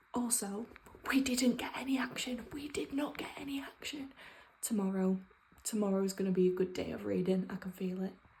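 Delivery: speaking in a whisper. Talking about a book late at night while everyone's asleep: whispering. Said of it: "I'm currently whispering 'cause, like, everyone's asleep".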